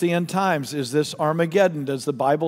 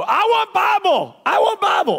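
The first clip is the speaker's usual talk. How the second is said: acted yell, much higher pitched and slower; 5 dB louder than usual. Telling a story of a young man yelling at a preacher from the front row: retelling a man yelling. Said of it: "the guy yells from the front row".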